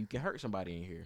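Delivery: plain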